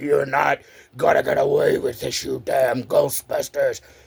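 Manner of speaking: creaky, rough, growly ghoul monster voice. Retelling their play, villains threatening the Ghostbusters in a monster voice. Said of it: "we had the monster voices".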